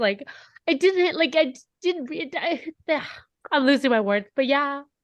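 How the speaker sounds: crying through the words, tearful and halting. Talking about realizing a friend was gone, crying while talking. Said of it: "I'm slowly crying now".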